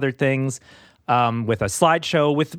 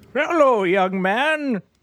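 very high, fake elderly old man voice; 9 semitones higher than usual. Greeting the co-host in a disguised voice: put-on old man voice. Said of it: "some old piece of crap sitting in your chair".

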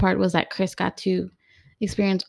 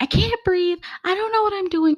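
mock panicked, very high-pitched frantic cry; 12 semitones higher than usual. Recalling panicking at the doctors after the anesthetic, retelling panicking. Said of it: "And I'm like panicking".

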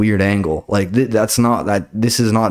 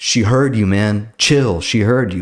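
ordinary delivery

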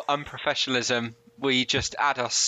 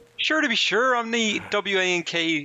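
put-on puppet voice, much higher pitch; 8 semitones higher than usual. During a joking bit, one speaker switches into a Kermit-like voice. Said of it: "You sound like fucking Kermit!".

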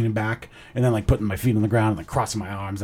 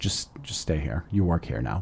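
very quiet, low, hushed, teasing joking tone; 6 semitones lower, 9 dB quieter than usual. Quoting a staff member who grabbed you, retelling a joking remark. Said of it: "Like jokingly".

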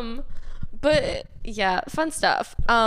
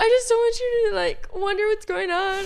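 mock bawling, higher; 10 semitones higher than usual. The speaker acts out what she told someone earlier, retelling talking while bawling. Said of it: "As I'm bawling".

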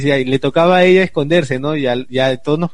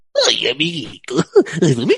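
swooping, sing-song cartoon dinosaur voice. Prompted to do Barney's voice, the speaker launches into it: Barney voice. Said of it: "la voz de Barney".

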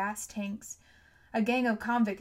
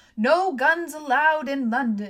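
very loud, slow, drawn-out high-pitched shout; 5 semitones higher, 9 dB louder than usual. An armored policeman lumbers through a frightened crowd, shouting.

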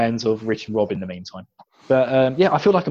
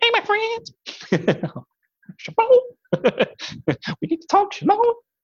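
very high, swooping, sing-song put-on voice. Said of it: "or like a Michael Jackson impersonation".

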